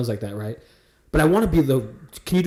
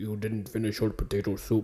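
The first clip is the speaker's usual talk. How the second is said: low, very quiet, gruff, rough Irish accent; 6 semitones lower, 11 dB quieter than usual. Showing the Irish accent they want to do on the show; gruff low Irish accent. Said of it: "I want to do like the gruff".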